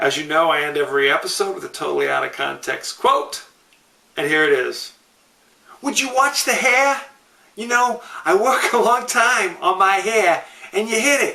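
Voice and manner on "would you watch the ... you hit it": put-on New York Brooklyn twang, pitched up. Host ending the episode with an out-of-context movie quote, brooklyn accent. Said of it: "That's my that's my Brooklyn accent".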